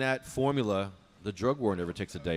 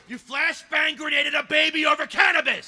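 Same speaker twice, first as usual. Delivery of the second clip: yelling, much higher, louder, slower; 6 dB louder than usual. Asked to say it with passion, the speaker repeats the line: yelling. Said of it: "People hear you yelling".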